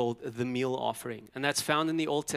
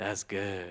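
put-on raspy voice, much lower and quieter; 5 semitones lower, 5 dB quieter than usual. Leading everyone to say it the way God would, raspy God voice. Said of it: "You got to have the rasp in your voice".

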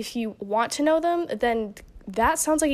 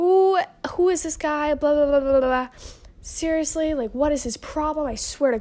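high, furious, angry ranting outburst; 5 semitones higher than usual. Retelling ranting at another driver: imitating own angry rant. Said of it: "I was just going off".

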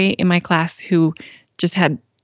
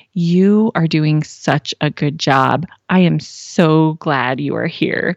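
whispered speech; 3 semitones lower than usual. Retelling a dream, comforting a little boy: retelling a whisper. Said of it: "I just whispered to him".

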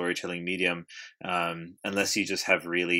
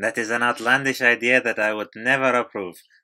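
put-on Spanish accent, louder; 4 semitones higher, 7 dB louder than usual. Speaking as Guillermo del Toro but sounding like the maid, in an off-target Guillermo del Toro impression. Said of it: "any Spanish accent always becomes the maid".

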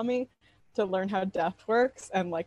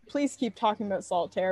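ordinary talk, nothing marked

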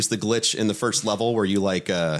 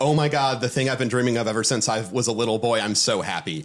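ordinary talk, nothing marked

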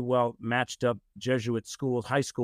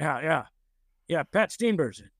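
put-on gruff voice; 4 semitones higher than usual. Retelling a surprise phone call from Dan Rooney, gruff Dan Rooney voice. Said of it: "I hear this gruff voice going".

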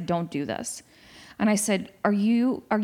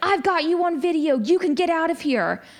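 put-on hostile, high-pitched berating shout; 8 semitones higher than usual. Recounting a man with a video camera berating a woman; imitating a man yelling. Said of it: "He's yelling at her".

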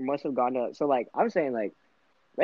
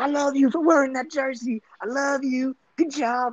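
put-on piercing, very high, shrieking squeal; 11 semitones higher than usual. Retelling a girl in the middle of the hallway: imitating a girl screaming. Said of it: "just screams".

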